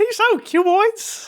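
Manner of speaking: high, squeaky, slow cartoon voice. Trying out a Mickey Mouse voice for a friend, who calls it good. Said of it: "I'm gonna try to do a Mickey Mouse voice".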